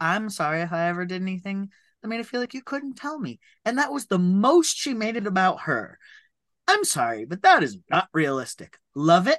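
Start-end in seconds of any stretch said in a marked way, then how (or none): 0.0-3.4 very gentle, soft, tender parental delivery. Retelling a mother's apology to her son in a finale: gently, imitating Olivia Colman. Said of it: "very gently like".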